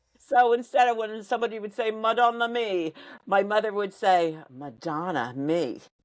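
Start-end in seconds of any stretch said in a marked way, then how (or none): 4.5-5.8 put-on very southern twang, lower. Imitating their mother swearing in italian, very southern twang. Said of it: "but with a very southern twang to her".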